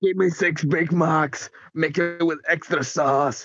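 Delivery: put-on gruff, military-sounding voice. Ordering food in a put-on voice: Captain Price voice. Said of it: "That just sounds like Captain Price now".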